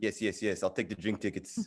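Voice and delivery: quiet, deep cartoon voice. Retelling his own reply to an offer, speaker slips into a Stewie from Family Guy voice. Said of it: "I just became Stewie from Family Guy there".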